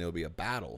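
put-on Boston accent. Joking around while playing, repeating the word battle: put-on boston accent. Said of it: "from Boston".

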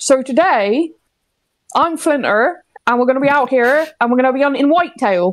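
accent from Somerset. Doing an April Fool's video on another creator's channel, in a Somerset accent. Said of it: "I go on yours and do the Somerset accent".

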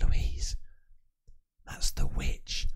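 whispering. Retelling telling a sister about a witch's house: retelling a whisper. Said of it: "Whispered it".

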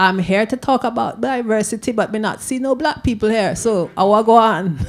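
imitated Caribbean accent. Quoting back to the listener what he said on a programme, in a Caribbean accent. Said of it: "I can only say it like a Caribbean person".

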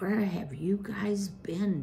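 hushed whisper, under the breath. Narrator reads a boy's question to his older cousin beside him, whispered. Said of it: "Basil whispered".

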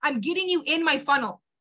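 ordinary delivery

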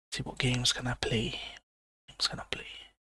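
soft, hushed whisper, voice kept down.

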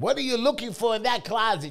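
shrill, loud, high hollering yell. A husband retelling his wife hollering at him, imitating Linda screaming. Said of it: "She's screaming at me".

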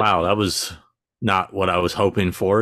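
ordinary delivery

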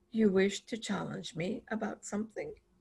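very hushed, soft-spoken, quiet and menacing. Reading a story, the narrator voices the animal silencing the grumblers, in a very quiet voice. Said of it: "ask in a very quiet voice".

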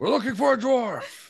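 put-on shrill, booming, drawn-out, very loud bellow. Playing a character entering a room, shouting in character. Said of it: "I'm gonna shout when we go into the room".

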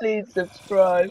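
high, put-on, crazy old man voice. Repeating a plea to subscribe: put-on crazy old man voice. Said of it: "You sound like some crazy old man".

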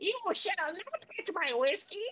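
very high, slow little fairy-gnome voice. Describing a tiny gnome house and its guardian: fairy gnome voice. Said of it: "a fairy gnome that lives inside of it, and he's like".

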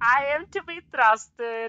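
very high-pitched, loud, put-on Mexican accent. Retelling a hot sauce bottle's line from a movie, in a Mexican accent. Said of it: "in a Mexican accent".

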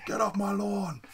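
high, mock grumpy old man yell. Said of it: "old me standing on my lawn yelling".

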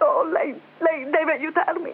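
very upset, shaken, distressed voice. A man in a desperate situation begs the only person who can help him: shaken. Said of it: "Lei è molto scossa".

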